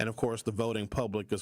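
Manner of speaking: plain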